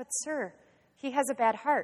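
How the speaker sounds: timidly. George, his right-hand man, speaks up to his boss: timid. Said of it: "timidly says".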